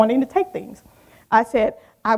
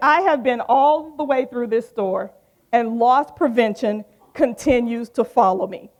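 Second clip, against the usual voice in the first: normal talking voice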